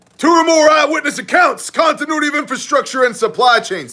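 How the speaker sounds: very high full-on yelling. A host runs through a list on his own show, yelling. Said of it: "why are you yelling?".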